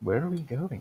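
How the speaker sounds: rather dapper, small little voice. A player voices their character waking up, in a dapper little voice. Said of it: "says in a rather dapper little voice".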